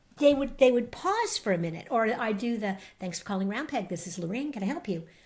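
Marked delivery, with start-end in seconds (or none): 3.0-5.1 smooth voice like a recorded phone message. Retelling answering the agency phone: voice like a voicemail greeting. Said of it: "I have this voice that I guess sounds like voicemail".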